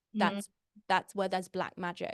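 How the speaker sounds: ordinary delivery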